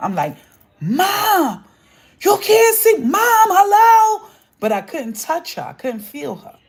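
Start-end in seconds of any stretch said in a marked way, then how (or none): 0.8-4.3 acted-out very high, loud, drawn-out yell. Retelling a childhood dream of calling to an unhearing mother: retelling yelling at mom. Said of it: "I'm yelling at her".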